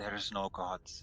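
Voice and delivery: hushed whisper. Kneeling beside an unconscious creature, whispering in its ear. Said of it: "whisper in its ears".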